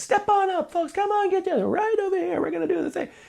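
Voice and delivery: very high, energetic, hawking carnival barker spiel. Describing a guy selling their CDs, imitating a carnival barker. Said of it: "we were at some kind of carnival".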